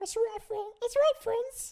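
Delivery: put-on words rattled off quickly in British accent. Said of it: "Elmo doing a British accent".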